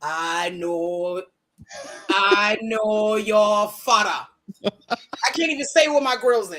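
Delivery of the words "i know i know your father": put-on slow, drawn-out West African accent. Complaining about the accents in The Lion King, quoting the monkey: West African accent. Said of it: "the fucking monkey has a discernible West African accent".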